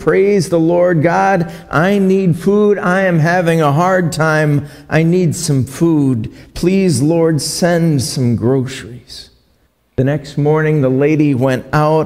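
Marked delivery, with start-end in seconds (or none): 0.0-9.3 begging, called-out plea. In a story, speaker acts out an old lady shouting a prayer from her porch; retelling a pleading shout. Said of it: "She stood on her porch and shouted".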